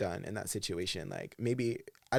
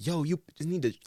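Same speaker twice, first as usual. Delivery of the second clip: man yelling, toned down and pitched up; 6 semitones higher than usual. Retell how a homeless guy accosted two women outside a restaurant, imitating a man screaming at people. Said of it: "he just started screaming at them".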